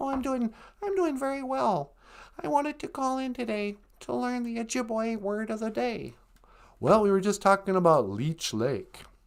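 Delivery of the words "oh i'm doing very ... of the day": soft, high, cartoonish frog puppet voice. Calling in to a podcast as a caller, answering the host: Kermit the Frog voice. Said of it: "It's me, Kermit the Frog".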